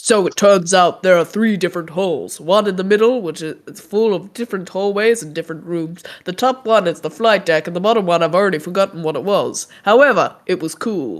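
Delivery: deep, menacing, threatening masculine robot voice. Speaking from inside the robot, describing the ship: put-on deeper threatening robot voice. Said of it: "a more masculine and threatening voice".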